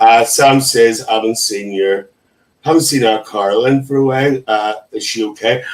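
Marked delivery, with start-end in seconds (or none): none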